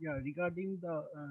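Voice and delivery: very soft, faint, nearly inaudible speech.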